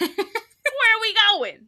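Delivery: put-on strong New York accent. Imagining a voice for the horse in the show: most New York voice. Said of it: "I want him to have the most New York voice".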